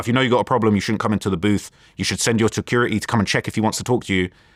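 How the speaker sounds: ordinary delivery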